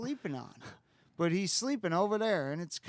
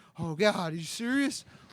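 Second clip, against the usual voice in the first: put-on nervous voice. Retelling a nervous friend's reply in the car: imitating a nervous friend. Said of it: "he's, like, so nervous, this kid".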